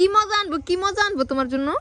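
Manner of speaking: high, loud, coaxing, cooing motherly voice.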